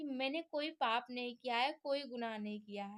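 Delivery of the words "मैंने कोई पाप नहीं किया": plain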